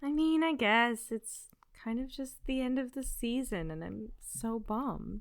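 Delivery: low, sad, downcast, bummed voice. A podcast host answers her co-host's question, in a sad voice. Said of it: "you sound so sad".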